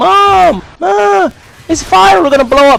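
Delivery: put-on very high, drawn-out sobbing little-kid wail. Retelling being eight during a house fire, calling to mom, imitating screaming and crying as a kid. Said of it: "I'm screaming, I'm crying like a little kid".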